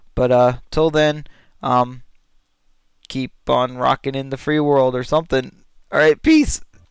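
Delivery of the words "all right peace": odd, cracking, breaking voice, puberty-style. Signing off at the end of a recording: voice cracking. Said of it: "my voice just cracked".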